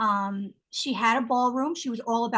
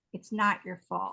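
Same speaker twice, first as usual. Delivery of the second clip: put-on crying, tearful, lower pitch; 3 semitones lower, 3 dB quieter than usual. Retelling someone's tearful reassurance: imitating someone crying. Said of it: "she was, like, crying".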